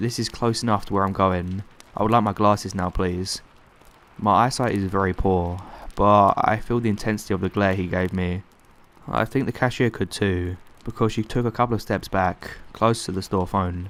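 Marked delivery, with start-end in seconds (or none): none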